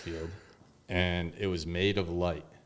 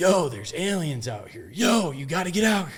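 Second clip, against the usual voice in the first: very high, loud, excited shouted yell; 10 semitones higher, 7 dB louder than usual. Retelling calling others outside to see the craft: imitating own yelling. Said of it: "I'm yelling to my brother".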